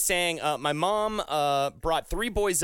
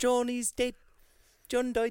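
put-on Liverpool accent; 7 semitones higher than usual. Mocking someone's Ridley Scott impression, the speaker repeats it as a mock Liverpool-accent Ridley Scott. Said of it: "That is not how Ridley Scott talks".

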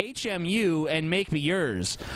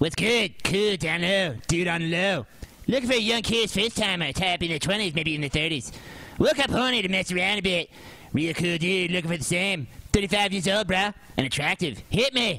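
put-on cartoonish bratty child voice. Speaker performs a personal ad, doing the Cartman voice. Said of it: "I'll just do the Cartman voice".

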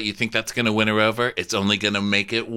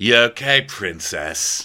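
put-on swaggering, cocky taunting tone. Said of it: "swaggers in".

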